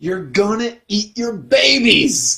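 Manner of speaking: acted angry preacher-style outburst, loud, high-pitched. Retelling a line yelled at the end of a sermon: imitating Fred Phelps yelling.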